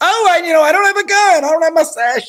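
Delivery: very high, cowardly, wimpy voice. Describing a movie character who throws off his sash at the end; imitating a cowardly wimp. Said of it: "because he's such a wimp".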